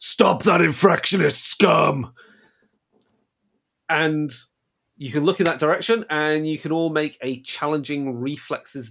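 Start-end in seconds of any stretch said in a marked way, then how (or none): 0.0-2.1 loud, blaring megaphone announcement. Game master voices a vigilite heard through a loudhailer: voice amplified by loudhailer. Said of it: "a loud hailer amplifying the voice of a vigilite".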